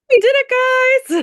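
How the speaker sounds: very high, shrill, loud put-on voice. Passing on someone's excited message to the group, in a high-pitched voice. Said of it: "Even in that high-pitched voice I just did".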